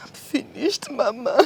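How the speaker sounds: sobbing, tearful crying through the words. Answering a worried mother's questions about why she is crying: crying. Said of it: "Why are you crying?".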